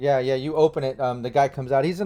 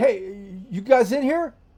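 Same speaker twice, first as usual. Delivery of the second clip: very high, rising yell across a room; 9 semitones higher, 3 dB louder than usual. Describing a game scene where the fixer calls from across the room, yelling. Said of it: "you can you hear him like yelling".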